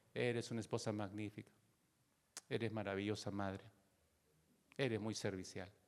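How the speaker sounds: cold, flat, emotionless monotone. Demonstrating a correct statement delivered flat, without any emotion. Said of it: "estoy poniendo la actitud sin ninguna emoción".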